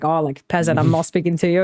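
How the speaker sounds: ordinary talk, nothing marked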